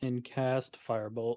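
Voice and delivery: ordinary talk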